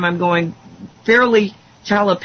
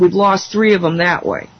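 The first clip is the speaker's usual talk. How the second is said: ordinary talk, nothing marked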